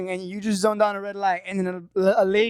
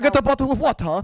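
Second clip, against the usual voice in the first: bad fake British accent, much higher; 4 semitones higher than usual. Speaker trying out accents in conversation, doing a bad british accent.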